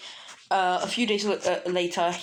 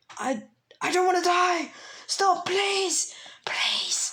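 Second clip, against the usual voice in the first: put-on shrill, screeching, very high voice; 12 semitones higher than usual. Narrating a fight, the speaker voices the lizard guy after losing both arms, screeching. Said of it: "screeching even".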